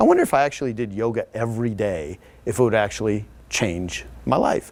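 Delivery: ordinary talk, nothing marked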